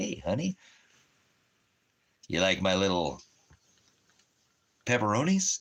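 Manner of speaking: swooping, sing-song devil voice. Telling a joke about the devil at the door, devil voice. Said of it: "The devil's like".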